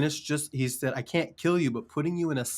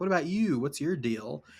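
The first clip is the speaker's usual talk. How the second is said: taunting, needling, teasing tone; 2 semitones higher than usual. Retelling how Higgs pokes at Dollman: imitating Higgs taunting. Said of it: "pokes at Dollman".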